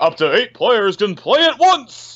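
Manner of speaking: slow, high-pitched announcing voice. Trying the announcer bit again on another feature: Smash announcer voice. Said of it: "that sounds better".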